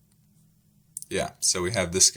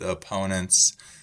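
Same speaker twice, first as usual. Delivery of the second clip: ordinary delivery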